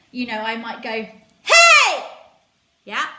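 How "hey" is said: very loud, very high yell. Showing how to yell for a taxi: yelling for a taxi. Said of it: "if I'm yelling for a taxi".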